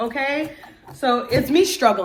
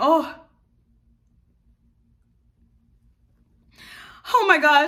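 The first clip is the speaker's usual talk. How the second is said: overexcited outburst, unable to calm down; 3 semitones higher than usual. Talking to viewers, unable to calm down, overexcited. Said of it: "I'm too excited".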